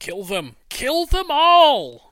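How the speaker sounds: shrill, booming, very loud, high-pitched acted yell. Voicing a character reaching the corner and ordering an attack: shouting in character. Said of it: "he just shouts".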